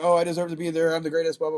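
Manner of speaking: normal talking voice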